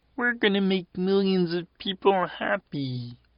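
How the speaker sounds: frog puppet character voice. A man speaks to a group looking at him expectantly, Kermit the Frog voice. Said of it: "in his Kermit the Frog voice".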